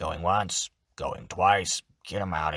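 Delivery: deep goblin voice. Suggesting voices for the listener's goblin, demonstrating a low-pitched goblin voice. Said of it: "a bit on the lower side?".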